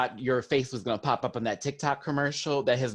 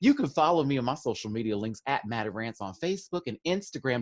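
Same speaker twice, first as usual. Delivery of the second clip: Texas accent slipping in. Giving listeners your social media links, slipping without knowing why into a Texas voice. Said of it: "Don't know why I'm going to my Texas voice".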